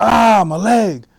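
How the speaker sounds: very loud, shrill, high-pitched pained scream. Retelling being wounded in an ambush: retelling his own scream. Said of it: "I remember screaming".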